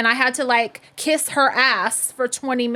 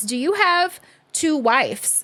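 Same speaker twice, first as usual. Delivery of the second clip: put-on dead-serious, slow delivery; 3 semitones higher than usual. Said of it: "a dead serious look on her face and goes".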